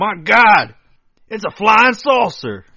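very high, very loud country drawl. Retelling a story, quoting what Alan yelled, in Alan's country accent. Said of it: "I don't know if that's his accent".

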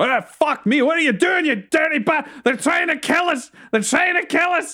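very high, frantic, alarmed, panicked yelling. Voicing two dwarves fleeing an explosion, panicked dwarves shouting. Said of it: "you hear both the dwarves go".

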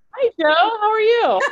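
exaggerated high voice.

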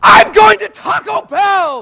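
very loud, high, intense voice. Retelling how a man he knew told stories: imitating Dave Busby's intense raised voice. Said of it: "I'm going to imitate him a little bit".

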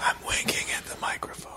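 soft, unvoiced whisper into the mic.

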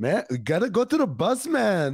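put-on Brazilian Portuguese-accented English, sing-song swooping tune. After talking to a man from Brazil, you find yourself talking like him, in a put-on Brazilian accent. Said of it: "He got that accent".

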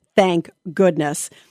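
ordinary talk

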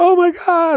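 piercing, very high, shrieking scream. Telling how their mom opened the door and saw the injury, retelling mom's scream. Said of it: "my mom like opens the door and screams like".

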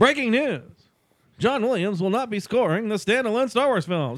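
loud news-announcer voice. Doing the announcer bit the others asked for, news announcer voice. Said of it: "let's do the announcer".

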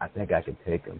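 hushed whisper under the breath. Retelling what someone whispered at a card game: imitating a whisper. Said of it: "whispers with us".

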